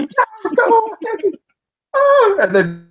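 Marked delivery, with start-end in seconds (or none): 0.0-1.3 put-on very high, girlish scream. Imagining Markiplier reviewing the movie: imitating Markiplier screaming. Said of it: "and screaming like".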